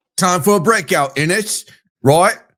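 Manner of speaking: poor put-on British accent. Reading out a bold prediction title, in a bad british accent. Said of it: "my accent's not great today".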